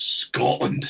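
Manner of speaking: Scottish accent, latent menace, edge of aggression. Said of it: "a little bit of latent aggression in there".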